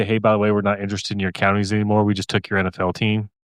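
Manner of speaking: normal talking voice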